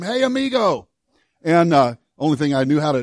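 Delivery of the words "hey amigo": high, raised, loud yell. Retelling running out of a store after a man: retelling his own yell. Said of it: "and I yelled at him".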